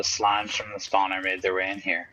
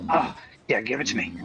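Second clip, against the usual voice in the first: put-on snorting meth-head junkie voice; 3 semitones higher than usual. Voicing the trading creature that is snorting like meth: imitating someone snorting like on meth. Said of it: "he's fucking over here snorting like meth".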